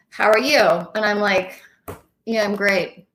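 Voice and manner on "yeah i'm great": unconvincing, downbeat, unenthusiastic tone. Showing how tone undercuts saying you're great, tone saying not great. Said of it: "the tone of my voice is not telling you that I'm great".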